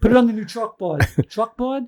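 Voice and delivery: fake 1960s New York taxi-driver accent. Joking around while someone writes on the chalkboard, 1960s New York taxi-driver accent. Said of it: "You're a taxi driver in 1960s New York".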